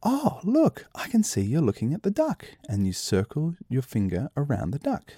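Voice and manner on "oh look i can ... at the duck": very high, swooping, excited sing-song full of wonder. Showing parents an interest cue for a baby: excited interest cue. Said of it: "a quick question in an excited voice".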